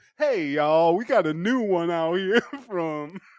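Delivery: on-air radio announcer, DJ delivery. Cutting off an argument to get back on the mic, DJ voice. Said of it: "He goes right back into his D J voice".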